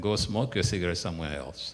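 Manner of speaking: ordinary talk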